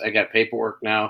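plain

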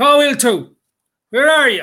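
put-on loud, high, roaring, bellowing shout. Telling a story about a man with a stick at the water, retelling his roaring. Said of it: "kept going on roaring and shouting".

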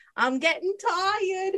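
little, high cartoon movie rat voice. Retelling a favorite movie scene, imitating a movie rat. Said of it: "you hear the rat go".

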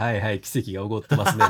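put-on sarcastic tone. Retelling what someone said to him: mock-sarcastic remark. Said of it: "完全にあれ皮肉で言ってた".

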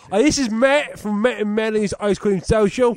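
high, loud, laid-on put-on Cockney accent. Recording a podcast promo after agreeing to use Cockney accents: Cockney accent. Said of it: "Cockney accents".

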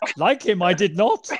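loud, booming little alien voice. Joking around with friends trading lines, in a Yoda voice. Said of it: "that would be hard in the Yoda voice".

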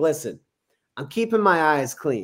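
ordinary talk

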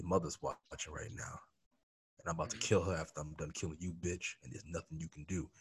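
soft stage whisper, very close. Describing what you say to a player you put in the dirt, acting out a whisper. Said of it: "you whisper in their ear like".

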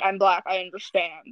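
imitated girl's voice. Retelling an argument with a girl about a stereotype, mimicking her voice. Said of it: "You had the same voice for".

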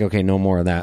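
ordinary talk, nothing marked

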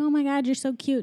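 mock super excited, high, fast, gushing rush. Retelling a story where a desk cop meets her, retelling someone super excited. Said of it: "he's like super excited".

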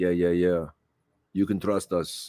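put-on low Russian-sounding accent. Acting out the Taliban's reply about the extradition list, in an accidental Russian-sounding accent. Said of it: "I sound Russian there".

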